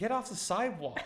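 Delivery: clumsy put-on American accent. Retelling a shout from a woman with a camera: bad American accent. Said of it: "I was gonna do an American accent there".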